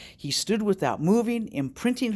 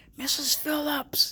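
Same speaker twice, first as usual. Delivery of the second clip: tiny, careful, very small, soft voice; 9 semitones higher than usual. A man calls to a woman so as not to startle her, very small voice. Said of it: "he said in a very small voice".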